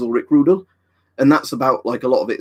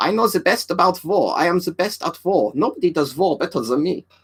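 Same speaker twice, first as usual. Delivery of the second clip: boastful, bragging tone with a German accent; 7 semitones higher than usual. Imitating a wartime leader bragging about war: German-accented Trump voice. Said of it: "I just wanna sound like a German version of Trump".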